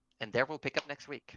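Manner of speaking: ordinary talk, nothing marked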